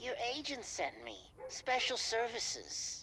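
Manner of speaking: slimy, oily, oozing delivery. A newcomer answers when asked who he is, in a slimy voice. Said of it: "that's a slimy voice".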